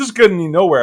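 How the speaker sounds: usual speaking voice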